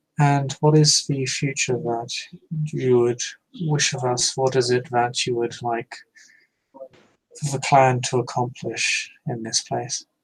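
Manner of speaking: hushed, barely carrying, soft, too-quiet calm murmur. As a calm character speaking across a distance, use a soft, too-quiet voice. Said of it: "in a fairly soft and almost a voice that is a little bit too quiet".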